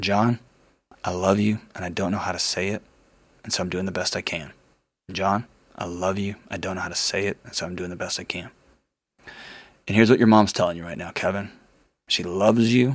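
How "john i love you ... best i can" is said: soft, quiet, hushed half-whisper. Retelling half-whispering to oneself during a phone call: quiet half-whisper. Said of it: "I started quietly whispering to myself".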